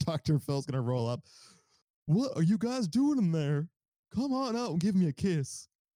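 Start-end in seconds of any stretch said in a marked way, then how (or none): 2.1-5.7 playful, high-pitched, teasing delivery. Speaker imagines Dr. Phil checking on people shut in a room: Dr. Phil impression. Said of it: "That's my Dr. Phil impression".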